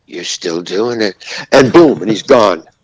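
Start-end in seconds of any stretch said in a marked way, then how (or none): 0.1-1.1 hushed, soft half-whisper. Retelling what someone half-whispered while walking past: imitating a half-whisper. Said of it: "he just whispers as he goes by".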